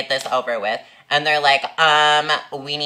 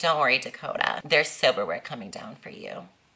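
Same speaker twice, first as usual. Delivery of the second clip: put-on sassiest, bitchiest, catty tone; 6 dB quieter than usual. Retelling what a coworker said to them: imitating a sassy bitchy tone. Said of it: "in, like, the sassiest, most bitchiest way ever".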